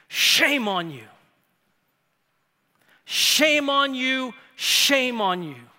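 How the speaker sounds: loud scolding scream, each word drawn out. Retelling a dean shaming a professor before the assembly: imitating a scream.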